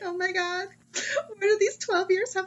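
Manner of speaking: very high, wistful, sentimental, nostalgic mom voice. Imitating a mom looking back on her child's graduation: imitating a nostalgic mom. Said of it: "You sound like a mom who's, like, looking back on her child".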